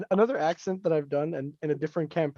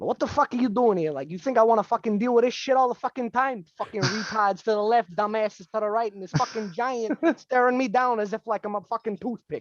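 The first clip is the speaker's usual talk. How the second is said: put-on greasy Jersey Italian accent, pitched up; 5 semitones higher than usual. A player voices a character hiding a posh accent, greasy jersey italian accent. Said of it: "first accent that came to mind was a greasy Jersey Italian accent".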